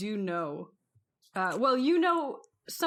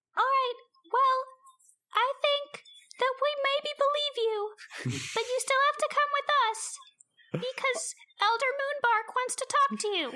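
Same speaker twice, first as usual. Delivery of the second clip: tiny, very high fairy-creature pixie voice. A game narrator voices a tiny pixie floating toward Snorkel: tiny little pixie voice. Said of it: "a little voice, uh, a different little voice than before".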